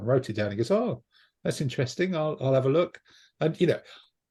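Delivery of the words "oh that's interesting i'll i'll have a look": polite, put-on French accent, pitched up. Quoting a man he met while taking photos, in a French accent. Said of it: "if you do that accent again".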